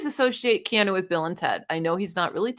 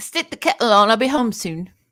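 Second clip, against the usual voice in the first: loud put-on British accent, like a cartoon mouse; 5 dB louder than usual. Asked to show off a british accent, repeating a phrase in a put-on british accent. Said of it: "Want me to do my British accent for you?".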